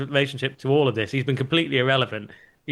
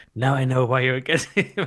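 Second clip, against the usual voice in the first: put-on whisper. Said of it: "he whispered in his ear".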